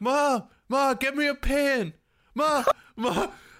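desperate yelling, high and loud.

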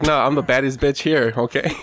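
usual speaking voice

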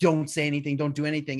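mock, fast, frantic, freaked-out pleading tone. Retelling how Nate's dad reacted when he was seen: imitating someone freaking out. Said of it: "freaking out".

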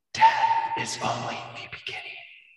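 harsh rasping voice. After the ancient Naga's body drops, the party hears a voice: very raspy voice. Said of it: "You all hear a very raspy voice".

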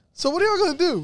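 high-pitched teasing.

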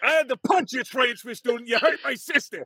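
very high-pitched, raging Brooklyn accent. Speaker imagines being cast as Toji in a dub: Toji with a Brooklyn accent. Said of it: "you have to do it with the Brooklyn accent the whole time".

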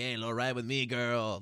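fake Mexican accent, put-on lowrider character voice. Describing a lowrider car character's personality, Mexican ese voice. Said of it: "like that kind of Mexican essay voice".

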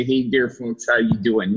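voice with a Wisconsin accent. Showing the inner voice that never left his head, Wisconsin accent. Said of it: "beat the Wisconsin accent out of me".

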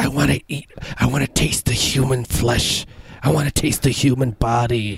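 put-on wet whispering voice. Imitating Nancy Pelosi turning and whispering about eating flesh: wet whisper imitating Nancy Pelosi. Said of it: "whispers, like, with a wet kind of".

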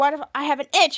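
ordinary delivery

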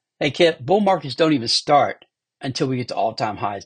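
ordinary talk

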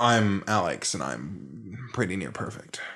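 slow, soft, sarcastic and boastful. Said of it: "That was sarcasm".

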